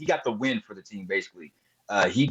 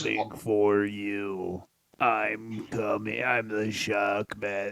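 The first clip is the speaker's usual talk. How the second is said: fake rough, gravelly voice; 2 semitones lower, 5 dB quieter than usual. Retelling a threat heard in old playbacks: Sid Justice gravelly voice. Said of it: "he's doing the gravelly".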